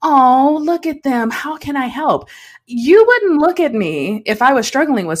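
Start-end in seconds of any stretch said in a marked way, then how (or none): 0.0-2.3 pitying, condescending tone, talking down. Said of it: "We take on that tone of voice".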